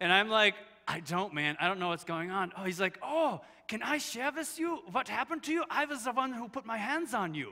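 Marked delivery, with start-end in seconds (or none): 3.0-7.5 put-on mangled, high-pitched Dutch accent. Retelling what a man said when he came up to the speaker, in a bad dutch accent. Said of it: "I'm going to butcher the Dutch accent".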